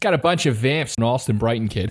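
put-on Boston accent. Host on an episode showing off a Boston accent bit. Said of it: "the Boston accent that we can do so well".

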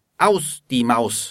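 ordinary talk

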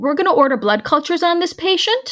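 rising upward inflection, statement ending high on patient. Showing the less respected way to give nurses a plan: upward inflection. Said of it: "from an upward inflection".

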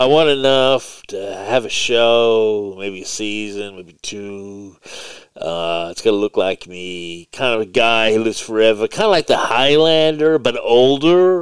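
generic put-on stoner voice. Quoting a man who wants his likeness used for a character, in a generic stoner impression. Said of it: "it's just like generic stoner impression".

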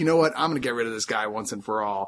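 ordinary talk, nothing marked

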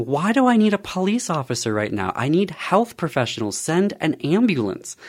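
urgent, insistent acted-out shouting, pressing hard. Retelling a call to nine one one for a diabetic partner: retelling a shout at 911. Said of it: "I remember shouting at them".

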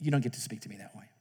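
put-on very quiet, calm, even, low voice. Retelling what a teacher tells disrespectful students, imitating a calm tone. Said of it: "she just calmly says".

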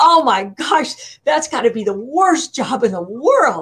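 aghast, dismayed, scream-like outburst, acted out. Recalling your reaction to a job offer from a bank, retelling a scream. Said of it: "And I was screaming".

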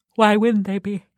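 yawning, spoken mid-yawn. Discussing whether the movies share one universe, yawning. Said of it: "Sorry, I yawned".

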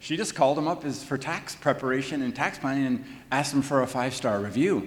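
plain

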